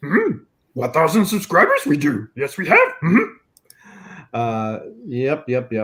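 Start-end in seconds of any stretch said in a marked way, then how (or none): 0.7-2.9 put-on little alien sage voice. Doing a quick bit about subscribers: Yoda voice. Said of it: "Or we can do Yoda".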